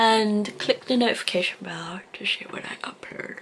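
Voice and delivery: exhausted, tired, worn-out voice. Closing a video, asking viewers to click the notification bell: tired, exhausted. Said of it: "I'm very tired".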